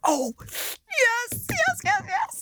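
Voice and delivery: acted eager sing-song yeses, very high, very slow. Retelling being offered to fire an RPG, the speaker acts out their excited reply. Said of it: "I was so excited".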